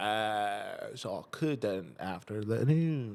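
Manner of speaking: fake British accent, very slow and drawn out. Retelling own reply about the schedule: put-on british accent. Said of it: "That's my British accent".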